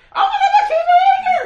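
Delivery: piercing, shrill, very high scream. Recalling a man the speaker first heard speak, retelling a scream.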